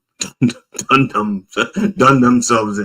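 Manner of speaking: speech broken by laughter. Stumbling over a phrase and cracking up: laughing while talking. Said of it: "I'm laughing".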